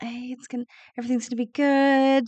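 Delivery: gentle whisper. Comforting a sleeping injured companion in character: whispering comfort. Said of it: "giving him little whispers".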